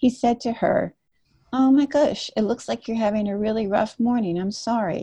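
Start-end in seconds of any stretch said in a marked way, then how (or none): 1.5-5.0 put-on gentle, kind, understanding tone. Retelling what a friend said to the woman at the counter, imitating Pete's kind, gentle tone. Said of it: "in that really kind, gentle, understanding way".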